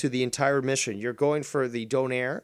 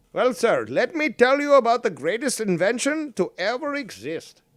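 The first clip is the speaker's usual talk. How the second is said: clumsy, bad, put-on Italian accent, pitched up; 8 semitones higher, 4 dB louder than usual. Answering an imagined American asking what a donair is, in a busted Italian accent. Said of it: "it's like a busted fucking Italian accent".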